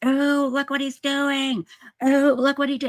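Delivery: shrill, very high screaming shriek. Retelling seeing what a man left behind: imitating own past screaming. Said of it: "I screamed and went".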